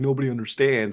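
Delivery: ordinary talk, nothing marked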